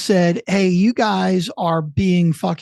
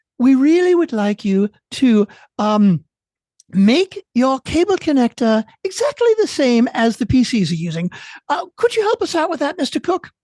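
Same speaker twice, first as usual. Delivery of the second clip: put-on British accent blended with German; 6 semitones higher than usual. Acting out a skit, addressing Mister Cook, in a mixed British and German accent. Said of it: "it's like my mix of British and German".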